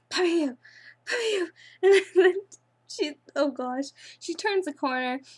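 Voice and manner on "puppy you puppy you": high, grumbled muttering under breath. Recounting a scary woman stomping around, imitating someone muttering under breath. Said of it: "under her breath".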